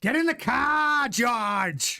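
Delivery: drawn-out high pirate voice. A listener asks for it, so the speaker does a Toto Wolff impression. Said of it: "That's my Toto Wolff impression".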